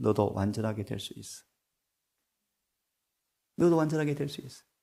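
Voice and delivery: soft, hushed half-whisper, close to the ear. Acting out Jesus half-whispering to hardened people: acting out a half-whisper. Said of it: "귓속말로 뭐라 그러세요?".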